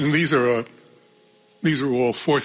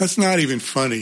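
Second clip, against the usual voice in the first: ordinary delivery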